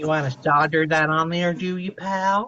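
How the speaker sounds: faked rural American accent. A streamer talks while soldering wires, in a put-on redneck accent. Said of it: "with my redneck accents".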